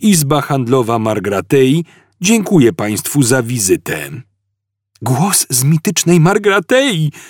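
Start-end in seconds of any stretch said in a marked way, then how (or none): 5.0-7.1 blurted-out, high-pitched exclaiming delivery. Hearing a message from a planet, a man exclaims. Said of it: "wykrzyknął Zafod".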